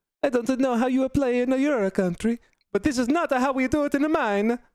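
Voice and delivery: put-on Italian accent, pitched very high. Quoting an Italian player's remark during a lost game, imitating an Italian accent. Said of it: "that Italian voice".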